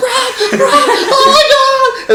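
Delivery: shrill, very high, stretched-out screaming. Retelling a movie's opening phone call from the man's wife: retelling a woman screaming. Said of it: "his wife is like screaming".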